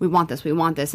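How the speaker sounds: ordinary talk, nothing marked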